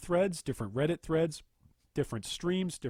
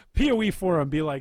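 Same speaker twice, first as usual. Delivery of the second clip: ordinary talk, nothing marked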